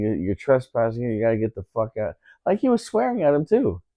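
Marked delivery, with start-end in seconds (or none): none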